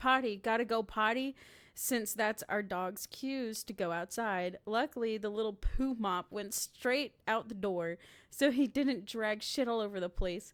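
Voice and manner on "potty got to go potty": ordinary talk, nothing marked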